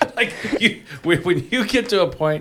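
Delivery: high voice, laughing through the words.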